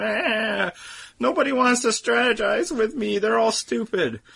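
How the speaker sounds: very high, whiny, complaining voice. Mocking a contestant's complaining on the show: imitating Tasha whining. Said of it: "All her whining and complaining about".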